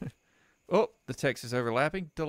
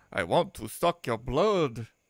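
spooky horror-film vampire voice; 4 dB louder than usual. Reading out a message from the computer, in a Dracula voice. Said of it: "That was my Dracula impression".

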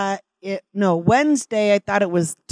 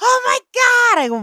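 put-on very high shrieking scream; 4 dB louder than usual. Retelling how a co-teacher suddenly screamed while changing a diaper: retelling her scream. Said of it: "she screams".

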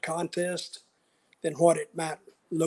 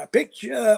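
put-on Southern accent, pitched up; 5 semitones higher than usual. Retelling what a truck driver said: imitating a southern accent. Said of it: "He had a real Southern accent".

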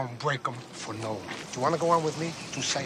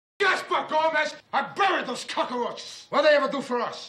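angry, explosive shouting, pitched very high; 5 dB louder than usual. Asked what a named man will do, he answers with an explosive outburst. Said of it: "what an explosion right there".

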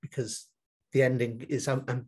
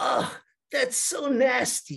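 put-on Dutch accent with a very high voice; 11 semitones higher than usual. Retelling what Tom said while looking at a setup during filming, Tom's Dutch accent. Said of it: "in his Dutch accent".

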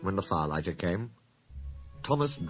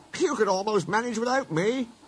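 laughing, much higher, louder; 4 dB louder than usual. Reading a story, the engine driver speaks to his tank engine: laughing. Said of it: "laughed his driver".

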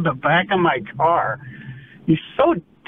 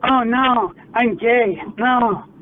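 high, very slow, drawn-out mocking voice; 5 semitones higher than usual. In a heated argument, mocking the other person with an impression of them.

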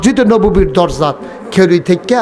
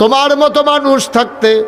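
put-on elderly woman voice, high. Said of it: "মহিলা ডাক দেয়া কয়".

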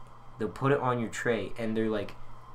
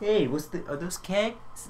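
put-on pitched-up New York Bronx accent; 8 semitones higher than usual. Acting out a stranger's remark in a story, Bronx accent. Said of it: "And the Bronx accents".

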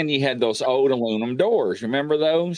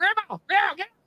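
put-on hollering, very high-pitched. Retelling hollering at grandma to wake her up, re-enacting the holler. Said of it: "I'm hollering at my grandmother".

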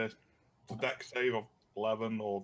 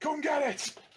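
very high, defiant, shouted battle cry; 4 dB louder than usual. Banging a hammer on a shield to draw a giant lizard: shouting a challenge. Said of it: "just shout".

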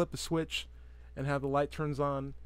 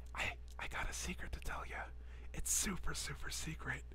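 slow, soft, hushed whisper; 2 semitones higher, 8 dB quieter than usual. Demonstrating the sign for whispering and telling the viewer a secret, a little bit whispering. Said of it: "I'm a little bit whispering right now".

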